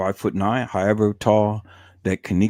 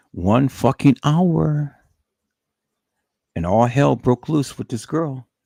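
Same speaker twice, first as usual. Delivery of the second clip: heated, riled-up, worked-up anger, pitched up; 5 semitones higher, 3 dB louder than usual. Ranting to listeners after dealing with stupid people, worked up and angry. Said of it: "I worked myself up".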